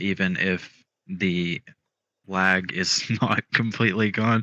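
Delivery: slow talking filled with laughter. Answering a question about a backup plan, laughing while talking. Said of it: "I'm laughing because I just saw".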